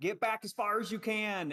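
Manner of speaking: high-pitched yelled shout. Voicing a character pushing a shelf over, yelling a warning to her. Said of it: "I'm yelling out".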